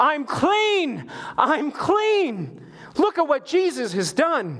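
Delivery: put-on, very high, slow, drawn-out jubilant cry. Retelling the healed leper's cry: imitating a leper yelling. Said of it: "Now he's yelling".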